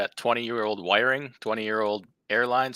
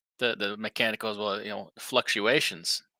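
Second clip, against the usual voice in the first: usual speaking voice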